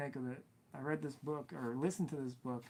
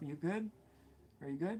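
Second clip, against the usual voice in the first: put-on pointed, loaded, passive-aggressive concern; 3 semitones higher than usual. Retelling what a customer would say: imitating a passive-aggressive customer. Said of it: "he's very, like, passive-aggressive".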